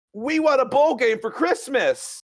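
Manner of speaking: very high, piercing, acted shriek at full volume. Retelling how she kept shouting over and over, imitating her shrill shout. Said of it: "she would like shrill that at the top of her lungs".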